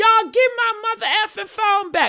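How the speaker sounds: high, screamed demand. Retelling how Nolan demanded his phone back: imitating Nolan screaming.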